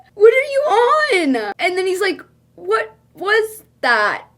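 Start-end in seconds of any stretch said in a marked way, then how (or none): 2.6-4.2 frightened, startled, spooked, scared tone. Retelling how he answered her messages: imitating someone sounding scared.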